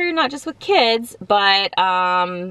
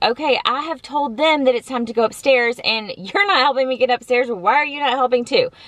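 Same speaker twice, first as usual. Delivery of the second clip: fed-up, frustrated, angry scolding tone; 4 semitones higher than usual. Retelling a frustrating moment getting the kids upstairs: retelling getting mad. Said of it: "getting mad at Cullen too".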